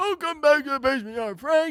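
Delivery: fake seventy-year-old man voice. Pretending to host the show at seventy years old: put-on old man voice. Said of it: "Seventy years old?".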